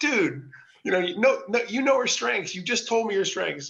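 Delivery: high-pitched screaming yell. Retelling yelling at a book character while reading: retelling own screaming. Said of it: "I'm screaming at him".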